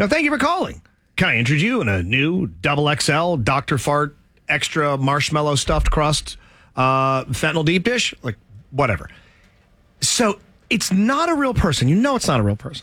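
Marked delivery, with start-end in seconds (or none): 0.0-8.1 canned automated phone robot voice. Imitating the automated phone system at a pizza place: imitating an automated phone robot. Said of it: "it's clearly automated. It's, it's a robot".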